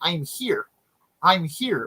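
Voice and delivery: very slow, drawn-out, swooping cartoon frog puppet voice. Retelling an audio clip of someone sounding like Kermit: Kermit the Frog voice. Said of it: ""I'm here" in Kermit the Frog's, like, voice".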